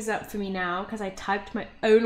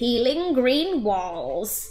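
put-on vague, elderly old lady voice; 2 semitones higher, 4 dB louder than usual. Reading out a room description, attempting a put-on old lady voice. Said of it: "I'm just gonna do a vague attempt at old lady".

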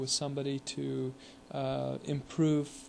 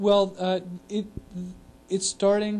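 stuttering, higher and louder; 6 semitones higher, 8 dB louder than usual. Beginning an overview of the revamp, stuttering. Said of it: "I'm really stuttering today".

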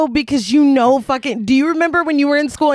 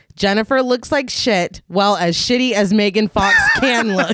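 ordinary delivery

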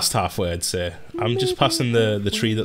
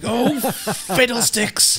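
play-acted very high, cross, angry outburst. Retelling how someone angrily said fiddlesticks in real life: imitating someone saying it angrily. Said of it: "they were so angry when they said it".

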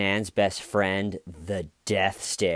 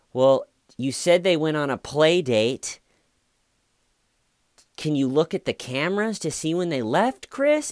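mock suspicious, pointed, prodding, accusing, pitched-up tone; 8 semitones higher, 3 dB louder than usual. Retelling how the best friend questions Chris about the cameras, imitating an accusing tone. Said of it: "she has this tone of like, listen, fuck boy, this isn't looking good for you".

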